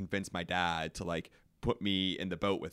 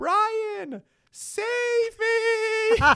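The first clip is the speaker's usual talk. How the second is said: very high panicked yell, "me" stretched; 9 dB louder than usual. Recounting flipping over in a river, retelling a panicked yell to a friend. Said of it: "I yell".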